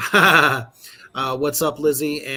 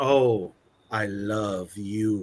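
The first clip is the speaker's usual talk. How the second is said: mock-seductive voice, much lower and slower; 6 semitones lower than usual. Describing a cartoon figure he wanted to be, contrasting what he wasn't: mock-seductive voice. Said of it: "He was not a seductive guy".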